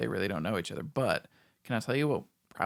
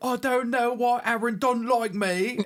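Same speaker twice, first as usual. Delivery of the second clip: terrible fake British accent, much higher, slower; 12 semitones higher, 7 dB louder than usual. Mimicking a reality star on a uk show, terrible british accent. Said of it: "it's a terrible British accent".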